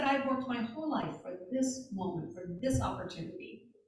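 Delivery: ordinary delivery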